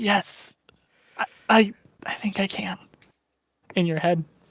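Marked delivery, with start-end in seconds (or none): 0.0-2.8 faint, slow whisper sounding far off. Voicing a faint being heard in a player's head: distant whisper. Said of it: "at a whisper, you hear a distant".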